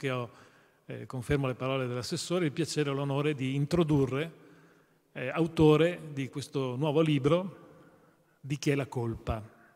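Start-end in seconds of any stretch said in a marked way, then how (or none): 8.4-9.4 colpa ends level and flat, no rise. Introducing a new book's title, with no question rise on colpa. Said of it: "Senza domanda, senza punto di domanda in fondo".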